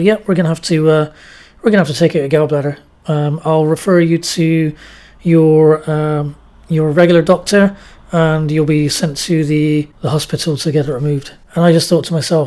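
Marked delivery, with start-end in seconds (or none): none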